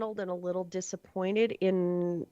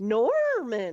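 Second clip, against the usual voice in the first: put-on eager, perked-up, excited, lively inflection; 3 semitones higher, 4 dB louder than usual. Recalling a monotone thing that sometimes said Norman excitedly: mock-excited inflection on Norman. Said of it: "with inflection in its voice, ... like it was excited about Norman".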